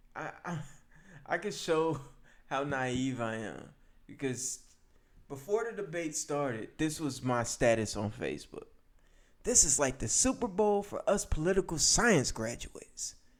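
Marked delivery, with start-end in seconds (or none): 9.4-13.1 put-on hopeful, young-sounding voice, pitched up. Rereading his old Facebook status from before the debate: reenacting youthful, hopeful tone. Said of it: "Listen to how much youth is in my my tone. My tone has so much youth in it, and it, it seems so hopeful".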